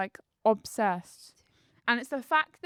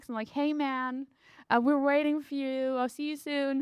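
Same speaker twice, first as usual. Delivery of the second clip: fake, put-on American accent; 3 semitones higher than usual. Speaker quoting the voice on an intro track, fake american accent. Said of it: "he's doing a f- fake like American accent".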